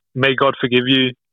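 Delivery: ordinary talk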